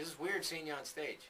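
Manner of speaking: usual speaking voice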